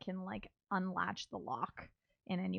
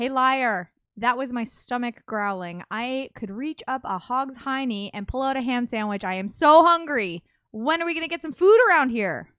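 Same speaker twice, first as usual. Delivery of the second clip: shouted out, very loud; 5 semitones higher, 14 dB louder than usual. In a tabletop game, calling out to the woman at the window, shouting. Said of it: "I shout out".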